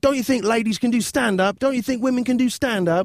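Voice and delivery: acted-out, very high, pleading shriek. Retelling a bombing comic's outburst at the audience: imitating someone screaming. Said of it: "she starts screaming at the audience".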